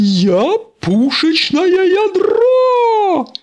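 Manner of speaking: very high-pitched, loud hollering yell. Narrator reading a story, Mater flying through the air toward the tower, yelling. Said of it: "Завопил Мэттер".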